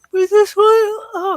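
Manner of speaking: loud, high yawn stretching the words. Reviewing a reboot series for listeners, yawning. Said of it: "sorry, I'm yawning".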